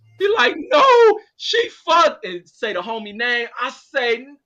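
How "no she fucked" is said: shrill, loud crying out through sobs. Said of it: "when I hear him crying".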